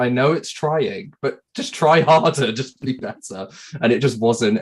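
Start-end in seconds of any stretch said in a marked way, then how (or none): 0.0-3.5 put-on fed-up, unreasonable anger, higher pitched. Retelling what was thought while playing a bad game: imitating own angry words. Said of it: "I was so irrationally angry at it".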